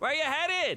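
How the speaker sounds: shrill, very high, loud yell. Retelling how a man stomping in juice yells out again to the speaker; retelling a yell. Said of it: "And he yells out again".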